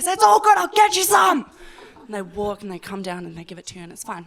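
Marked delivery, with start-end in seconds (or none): 0.1-1.5 very high, shrill shout from a distance. Acting out how someone shouts across a distance to be served; imitating a shout. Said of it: "So you do this whole screaming thing".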